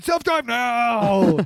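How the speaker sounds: high, very loud scream, drawn out. Recapping a story where John loses control of the car, retelling a scream at the car. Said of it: "he starts screaming at it".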